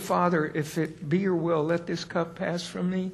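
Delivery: calm and quiet, soft and even.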